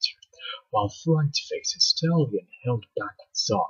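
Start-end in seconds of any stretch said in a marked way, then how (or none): none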